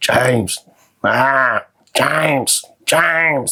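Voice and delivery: mock, very slow deathbed voice. In a comedy bit, acting out his mom on her deathbed: imitating mom's dying voice. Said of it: "That's my mom's dying voice".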